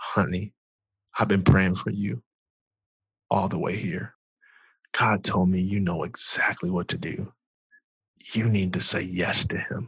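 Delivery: imitated out-of-breath voice. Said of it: "out of breath 'cause she ran".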